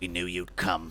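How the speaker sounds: raspy, hoarse, gravelly voice. The masked cult leader greets the captive brought before him, raspy voice. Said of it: "You hear a raspy voice".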